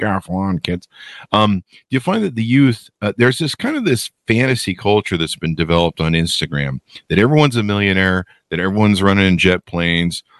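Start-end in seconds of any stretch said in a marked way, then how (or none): 0.0-0.9 put-on old man on his lawn voice. Joking that he talks like an old man, doing a guy on a lawn. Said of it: "I talk like a guy on a lawn going".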